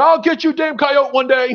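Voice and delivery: mock, high, hollered scream from afar. Speaker retells the man with the shotgun yelling across the field: retelling a scream. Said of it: "I hear him scream".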